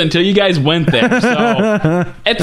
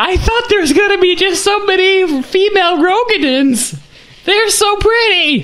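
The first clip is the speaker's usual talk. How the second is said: very high-pitched, squeaky put-on voice; 13 semitones higher than usual. During a talk about player races in a game, do a Nika impersonation. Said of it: "That's my Nika impersonation".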